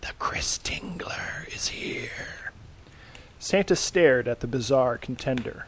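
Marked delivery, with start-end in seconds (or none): 0.0-2.5 slow, drawn-out, hissed whisper. Narrator voicing a bizarre flaming contender arriving before Santa: hissing. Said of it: "It hissed".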